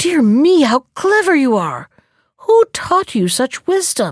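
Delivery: high-pitched, admiring, praising exclamation. The lion speaks to the jackal, exclaiming admiringly. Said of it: "exclaimed the lion, looking at him admiringly".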